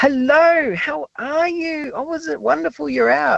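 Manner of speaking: very high, slow voice like talking to toddlers. Showing how people talk to someone in a wheelchair, in a high-pitched voice used with kids. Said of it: "use a high pitched voice like we do with kids".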